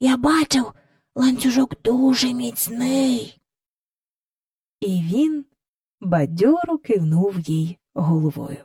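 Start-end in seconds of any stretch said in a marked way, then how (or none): 0.0-3.4 hushed whisper. A boy lying in bed whispers to another child, whispered. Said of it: "прошепотів Майкл до Джейн".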